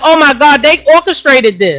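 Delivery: normal talking voice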